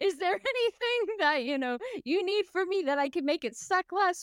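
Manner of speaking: mock heated arguing. Retelling a heated argument with her mother: retelling her own angry reply. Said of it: "we got into a pretty heated argument".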